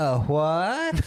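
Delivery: extremely camp, flamboyant voice. Retelling a gruff man's sudden reply in a scene, in a very camp voice. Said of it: "in the campest voice possible".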